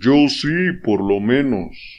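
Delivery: slow drawl, each word stretched syllable by syllable. Narrator reads the king's reply to the duke, drawling out the syllables. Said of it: "arrastrando las sílabas".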